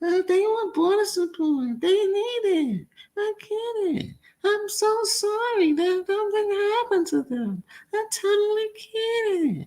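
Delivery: very high, puny, tiny cartoon voice. Mimic the woman whose voice killed you off, in a mocking puny little toony voice. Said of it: "that little puny little toony voice".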